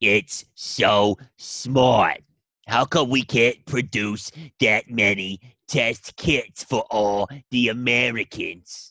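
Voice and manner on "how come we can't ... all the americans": put-on New York accent. Replying to another speaker, in a put-on New York accent. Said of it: "I had a New Yorker accent".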